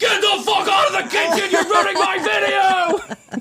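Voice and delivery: shrill, very high, raging, furious put-on yell. Retelling a video where a man yells at a girl entering his kitchen, retelling an angry yell. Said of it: "he goes off on her like crazy".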